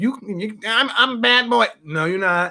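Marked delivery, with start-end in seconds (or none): 0.0-1.7 mocking, imitated nasal voice. Mocking guys who call themselves bad boys: mocking nasal voice. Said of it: "a nasal voice like this".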